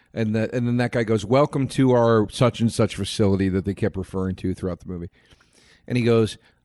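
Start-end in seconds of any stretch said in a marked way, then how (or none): none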